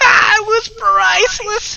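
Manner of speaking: very high, very loud, shrill creature cackle. The storyteller voices the creature, doubled over in laughter: cackling creature voice. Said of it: "The creature cackles, doubling over in laughter".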